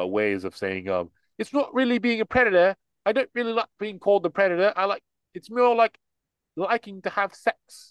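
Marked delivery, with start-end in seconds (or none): 1.4-7.9 high, put-on, smug British accent. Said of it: "your little British, uh, asshole voice".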